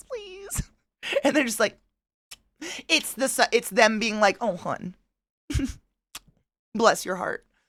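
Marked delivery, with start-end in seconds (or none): 4.4-7.4 put-on, pitying, sorry-for-you sympathetic tone. Retelling how the tamale sellers answer: imitating a pitying tone. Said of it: "I think they pity me".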